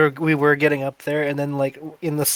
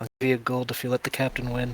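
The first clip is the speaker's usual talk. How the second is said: soft, hushed, private stage whisper; 3 semitones lower, 7 dB quieter than usual. Leaning over to Berkey in character during a contest: half-whispering in character. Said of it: "whisper to him".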